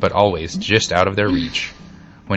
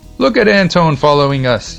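high, loud yell; 8 semitones higher, 6 dB louder than usual. Pumpkin calls out to his vegetable followers; yelled. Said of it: "yelled Pumpkin".

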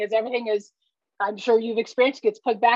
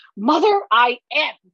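loud, mock yelled scream in a demonic voice; 3 semitones higher, 5 dB louder than usual. Retelling answering her mother, the speaker screams in her devil voice. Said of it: "I screamed in what she calls my devil voice".

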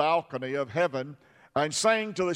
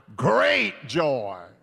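slight roll in the voice, rolled r on great; 4 dB louder than usual. Speaker leads the audience in repeating a phrase: Tony the Tiger voice. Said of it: "like Tony the Tiger".

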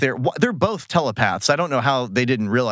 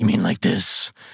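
put-on ridiculous whispery voice, lower pitch; 6 semitones lower than usual. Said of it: "it's a pretty ridiculous voice".

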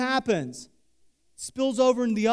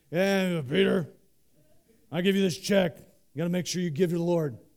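big, gruff, intimidating voice, deep and low; 5 semitones lower than usual. Retelling what a man from church said, in Peter Schellenberger's big gruff voice. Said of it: "he has a big gruff voice".

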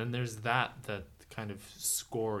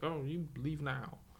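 quiet, soft, slow teacher voice; 4 semitones higher, 4 dB quieter than usual. Retelling a movie scene where a teacher orders someone out: quiet impression. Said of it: "you get really quiet when you do those impressions".

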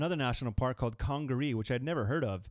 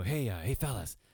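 put-on whisper, lower pitched; 3 semitones lower than usual. Retelling calling out to young guys in the dark: imitating own past whisper. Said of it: "whispering at some young guys".

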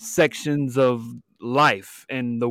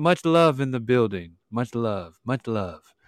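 calm put-on podcast host voice. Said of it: "my, uh, Lex Friedman podcast voice on".

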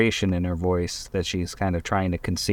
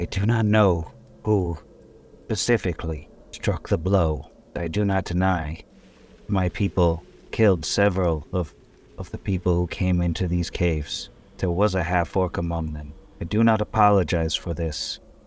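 slow, measured, each word carefully weighed. Skulk leader, asked about a death, answers measuring her words carefully. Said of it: "And perched in front of that hut is another one of these skulks. Of course, I constantly forget the command to display it, but she's emaciated. There's even more daggers than the rest of them, but she".

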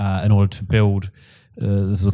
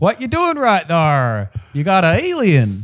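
bad put-on Southern American accent, sing-song; 8 semitones higher than usual. Joking about driving with a dying alien in the 50s: put-on southern american accent. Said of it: "middle American accent that I'm doing".

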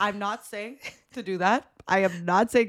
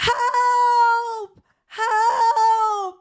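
very high, shrill, wailing, drawn-out screams; 14 semitones higher, 5 dB louder than usual. Speaker recounting screaming out of an Airbnb window, retelling a scream for help. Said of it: "start screaming".

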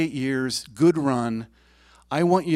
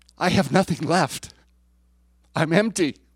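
put-on sobbing, emptied-out, words barely getting out; 3 semitones higher than usual. Retelling kneeling in the living room, imitating own sobbing words. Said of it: "And I sobbed".

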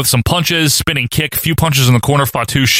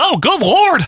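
much higher, exasperated announcer voice. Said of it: "And Kevin Kelly's like".

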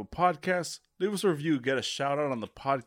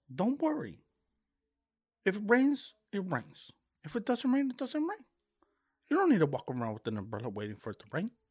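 put-on high, swooping, drunk mobster voice with Mexican accent; 6 semitones higher, 3 dB quieter than usual. Hosts deliver this week's words of wisdom in a bit: drunk Mexican Tony Montana accent. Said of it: "Brought to you by a drunk Mexican Tony Montana".

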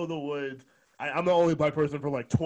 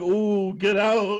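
high, spooky, put-on ghost voice; 6 semitones higher, 6 dB louder than usual. Retelling what a woman told her on arrival, in a ghost voice. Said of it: "she said it like a ghost".

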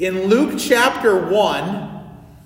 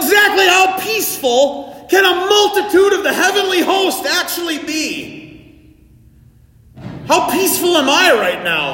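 loud shouting, pitched higher; 10 semitones higher, 4 dB louder than usual. Preaching late at night about the heavenly host: yelling loudly. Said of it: "I'm yelling kinda loud".

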